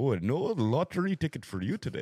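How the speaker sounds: put-on Indian accent. Playing a shop clerk talking to a customer: indian accent. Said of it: "the great Indian accent".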